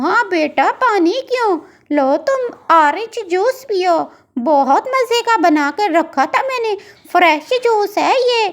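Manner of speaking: elderly auntie cartoon bird voice. In a cartoon, the aunt bird offers juice to young Pinky, old auntie bird voice. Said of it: "साथ में उसके पसीने भी छूट रहे होते हैं क्योंकि वो इतनी बूढ़ी होती है कि उससे अब काम नहीं होता। / साथ में उसके पसीने भी छूट रहे होते हैं क्योंकि वो इतनी बूढ़ी होती है कि उससे अब काम नहीं होता। / मैं तो".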